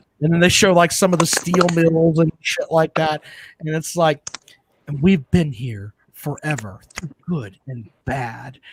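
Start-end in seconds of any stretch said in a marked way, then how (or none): 4.9-8.6 advertisement-style narration voice. Imitating a celebrity narrating a city promo video: Tom Hanks impression. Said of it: "do my best impression".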